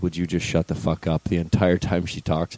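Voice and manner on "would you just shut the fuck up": muttered whisper under breath, lower. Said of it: "whisper underneath my breath".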